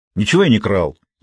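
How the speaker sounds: angrily muttered words. A boy, accused by an old shopkeeper of stealing the notebook, angrily muttered. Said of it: "зло буркнул мальчик".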